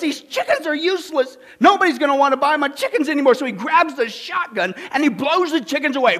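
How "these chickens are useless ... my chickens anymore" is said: yelled complaint in a farmer voice. Telling a joke, the farmer finds injured chickens: farmer yelling. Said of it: "the farmer yells".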